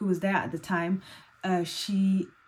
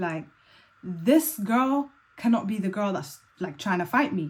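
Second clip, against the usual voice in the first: ordinary delivery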